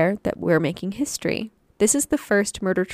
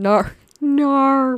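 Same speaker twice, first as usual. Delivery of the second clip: put-on Australian accent, loud, vowel stretched; 6 semitones higher, 5 dB louder than usual. Saying the only word known in that accent: Australian accent. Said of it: "The only thing I can say in an Australian accent".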